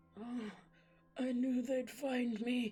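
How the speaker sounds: put-on wheezy, drawn-out delivery. Reader narrating a story where Old Man Crumbbeard lies on the forest floor, wheezing. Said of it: "he wheezed".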